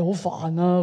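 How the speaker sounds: put-on sulky, clipped, curt tone. Acting out an impatient person's reply, mock-sulky, curt tone. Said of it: "咁樣嚇，咁啊，講嘢咧又會好晦氣啦，冇尾音嘅嚇".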